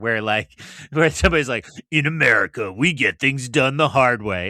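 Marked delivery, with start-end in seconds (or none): 1.9-4.5 truck commercial announcer voiceover voice. Pitching a truck commercial idea to the other speaker, doing a truck commercial voiceover. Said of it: "a truck commercial with your full voiceover".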